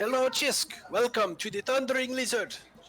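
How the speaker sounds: booming, loud, very high-pitched voice. Voicing an innkeeper greeting guests at the door: loud greeting in character. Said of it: "he asks for all of your names very loudly".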